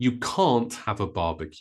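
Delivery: can't stressed hard, rest kept light. English pronunciation lesson contrasting can and can't: stress on can't. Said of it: "With can't, because it's negative, we stress it".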